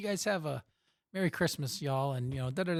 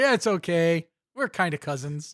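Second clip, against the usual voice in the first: mock laughing while talking, louder; 3 semitones higher, 7 dB louder than usual. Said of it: "starts busting out and starts laughing".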